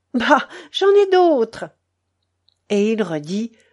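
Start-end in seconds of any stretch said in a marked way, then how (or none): 0.1-1.7 sudden exclamation, high-pitched and loud. A woman answers a man apologizing about yesterday's umbrella, exclaiming. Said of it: "Elle s'exclama".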